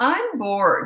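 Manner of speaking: put-on bratty, snotty high-pitched little-kid tone. Recalling what a boy of about five said to them, imitating a snotty tone. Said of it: "in that snotty tone".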